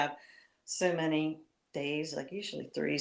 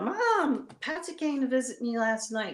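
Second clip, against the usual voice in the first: put-on, high, happy, glad yell; 8 semitones higher than usual. Retelling the moment they yelled to their mom from the stairs: retelling a yell. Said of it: "And I yelled".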